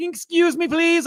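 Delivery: very high, squeaky, mocking nerd voice. Retelling a cosplayer in a crowd asking to get through, Conan O'Brien mocking-nerd voice. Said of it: "making fun of a nerd sound".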